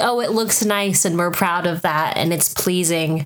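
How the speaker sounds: plain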